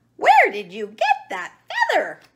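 high, loud, cackling hen-like squawk. Narrator reading Henny the hen's question to Chicken Chuck, cackling. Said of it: "Cackled Henny the hen".

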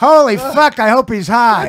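very loud, very high-pitched, very slow, drawn-out outburst. Retelling what Norm said on hearing the news, Norm impression. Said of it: "That's a great impression of Norm".

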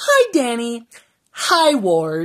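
mock, very drawn-out, swooping, awkward, cringy delivery. Retelling how a character greeted Danny and Ward: imitating a cringy greeting. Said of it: "that was supposed to be cringy".

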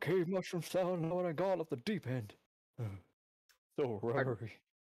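put-on elderly man voice. Voicing a character who has been stuck in a cave for months, old man voice. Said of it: "I should give an old man voice".

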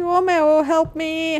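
high, frightened, pleading voice. Hunted by a ghost in a game, the streamer calls for help, scared pleading. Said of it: "I'm so scared".

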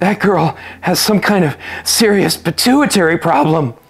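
winded, panting, out-of-breath wheeze. Just after escaping up the stairs, a character remarks on a girl: wheezing. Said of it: "wheezed Jake".

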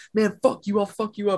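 high, heated, angry screaming yell. Retelling a traffic fight, the speaker acts out a pissed-off driver screaming. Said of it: "they're both screaming at each other".

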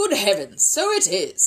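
storybook-style exclaiming. A man realizes the object from the chimney is a hat, exclaiming. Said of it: "exclaimed Mr. Brown".

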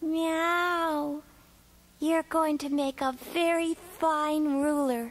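smiling, high, very slow, "meow" drawn out. Thanking him for his honesty, she tells him: smiling. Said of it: "she smiled".

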